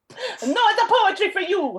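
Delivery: high-pitched yell in a put-on Italian accent. Imagining an Italian Contessa yelling at Ada, yelled in a put-on Italian accent. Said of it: "I imagine her yelling at Ada in an Italian accent".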